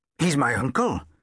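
proud, announcing tone. Josh answering his teacher's question about the book, announced proudly. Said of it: "Josh announced proudly".

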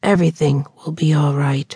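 softly spoken. Holding a woman closely in his arms, he repeats his words to her softly. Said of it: "he repeated to her softly".

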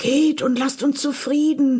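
high call-out. Reading a story: one of the drinking men calls out, called out. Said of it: "rief einer der zechenden Männer".

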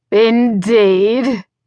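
drawn-out word, laughing roughly and coarsely through it. The Duke answers the woman who entered his room, with a coarse laugh. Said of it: "he said with a coarse laugh".

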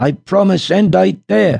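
very high, slow, creaky outcry. The mother answers the magician's offer at once, crying out without hesitation. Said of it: "cried Mama Alligator without hesitation".

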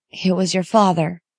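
hoarsely whispered. A mother answers her child's question about the break-in, in a hoarse whisper. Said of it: "she whispered hoarsely".

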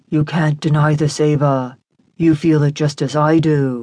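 gentle, coaxing, pressing insistence. He closes the door behind him and urges ava gently. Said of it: "he urged gently".

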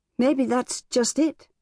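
high, musing, half-wondering murmur. Talking with an older man about her mother, murmuring. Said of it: "Emma murmured".

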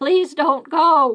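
screaming, yelled out with full force. Reading a character begging a departing ghost: screaming. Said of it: "Myrtle screamed".

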